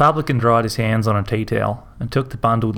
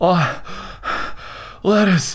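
breathless, bewildered, high confused gasp; 8 semitones higher than usual. A man confronted by a woman at her door, gasping in confusion. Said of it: "could only gasp in confusion".

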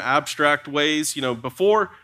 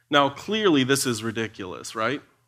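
plain

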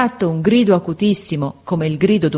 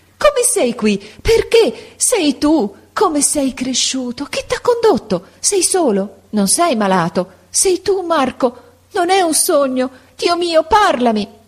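very high, ecstatic, wild cry of joy; 10 semitones higher than usual. Narrating a story, a woman greets marco at her bedside, crying out wild with joy. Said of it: "gridò pazza di gioia".

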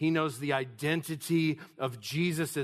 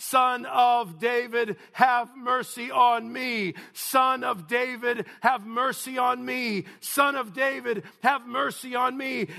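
loud, drawn-out desperate crying out, over and over; 8 semitones higher, 5 dB louder than usual. Retelling a blind man crying out despite rebukes: imitating crying out all the more. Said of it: "continually crying out all the more".

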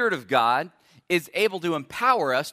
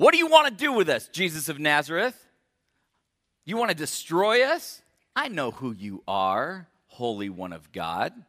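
strange, odd put-on voice, swooping. A preacher retelling a service attender interrupting Jesus mid-sermon, in a weird voice. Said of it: "and in a weird voice".

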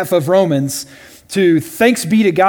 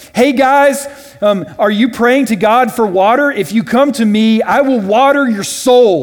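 acted-out scream, higher pitch, slower pace; 5 semitones higher, 3 dB louder than usual. Speaker retells a prophet calling out to a praying crowd, retelling a scream. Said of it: "screams at the top of his lungs".

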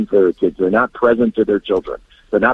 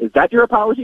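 playful, mocking, teasing voice, very high; 13 semitones higher than usual. Retelling how his wife mocked his apology: imitating her mocking question. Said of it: "she says it with a smile".

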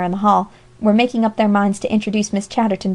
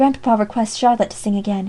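whispering. A boy runs up the platform steps and whispers to a girl. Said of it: "he whispered to Polly".

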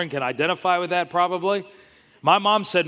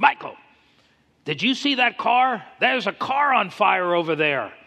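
put-on loud Lebanese accent, motherly voice; 4 semitones higher than usual. Retelling what his mom said when she came home, in her loud Lebanese voice. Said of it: "in her loud Lebanese voice".

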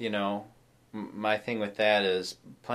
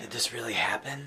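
imitated hushed tone, quieter; 5 dB quieter than usual. Retelling a question someone asked at a family event: imitating a hushed tone. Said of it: "ask in kind of a hushed tone".

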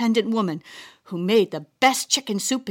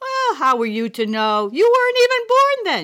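light laugh through the words, pitched up; 8 semitones higher than usual. A grandmother answers her grandchild's surprise about her past: laughing. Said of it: "she laughed".

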